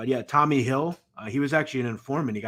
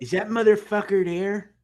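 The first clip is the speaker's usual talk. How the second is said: put-on Chicago accent, higher and louder; 8 semitones higher, 4 dB louder than usual. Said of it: "the Chicago accent was the funniest".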